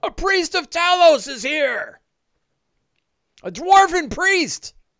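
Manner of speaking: shrill, very high, loud yell. As game narrator, voicing a figure on a tower calling out, yelling out. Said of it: "And he yells out".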